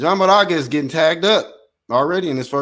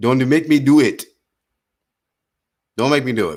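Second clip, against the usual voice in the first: barely Nigerian, badly done fake Nigerian accent. Joking with viewers while calling a fight: bad put-on Nigerian accent. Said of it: "That wasn't even Nigerian".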